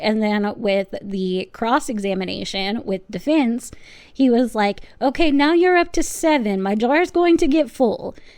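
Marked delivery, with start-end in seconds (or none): 5.0-8.1 put-on Indian accent, pitched up. Retelling a witness's joke during initial questioning: imitating Doctor Chopra's Indian accent. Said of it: "by doing the accent".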